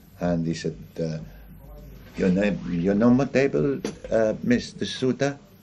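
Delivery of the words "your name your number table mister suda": imitated French or Italian accent. Retelling how a man who came to their table greeted them, French or Italian accent. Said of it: "with like a French or Italian accent".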